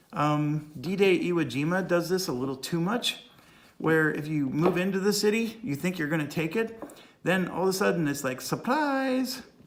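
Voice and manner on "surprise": very high, bad, put-on Chinese accent. Describing a surprise ambush in a war game, in a bad Chinese accent. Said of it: "bad Chinese accent".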